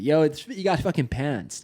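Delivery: put-on American accent, American way of saying it. Joking about a word that sounds american to him: put-on american accent. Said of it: "Pantsed is American to me".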